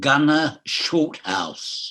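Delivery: drawn out, very slow, deliberate, word by word. Melvin Hayes gives the name of his character, saying it very slowly. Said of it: "I'll say this very slowly".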